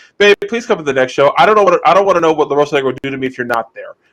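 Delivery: ordinary delivery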